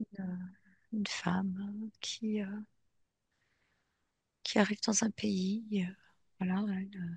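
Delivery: soft, unvoiced whisper.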